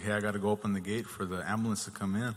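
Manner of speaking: ordinary talk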